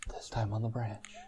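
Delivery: soft whisper. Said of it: "Talking very softly".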